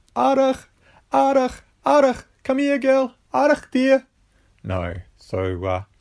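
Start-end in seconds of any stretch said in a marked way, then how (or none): 0.2-4.1 shrill, very loud, high-pitched calling yell. Imitating calling a runaway dog in the streets: imitating yelling at the top of lungs. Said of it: "yelling out at the top of their lungs".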